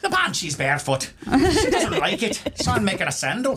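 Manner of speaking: very high, put-on stage Irish accent. Podcast hosts riffing on working-class shoemakers, voicing one: Irish accent. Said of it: "forgive my uh, Irish accent".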